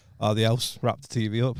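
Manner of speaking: put-on unimpressed child tone. Retelling the kids' reaction to the wrapped TV: imitating unimpressed kids. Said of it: "it was just not worth the reaction".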